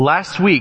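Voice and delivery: angry rant, rising pitch. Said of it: "Cassie will be mad at me, angry, furious".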